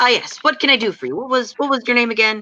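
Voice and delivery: eager, excited, quick, high-pitched bustling chatter. Narrating a scene and voicing Borton greeting visitors, excited Borton voice. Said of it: "he kind of gets really excited".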